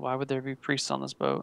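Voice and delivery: low, soft, dropped tone under the breath. Voicing a character who answers another player's question, in a low tone. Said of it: "he says in a low tone".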